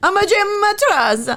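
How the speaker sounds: bad put-on Italian accent. Imagining how a man gave a false name, in a bad Italian accent. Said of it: "he does the bad Italian accent".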